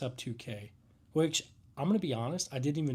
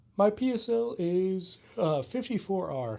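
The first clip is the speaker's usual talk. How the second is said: very slow, pitched-up drawl stretched by a yawn; 5 semitones higher, 4 dB louder than usual. Chatting with others about gear, giving a number mid-yawn: yawning while talking. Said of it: "Sorry, I'm yawning".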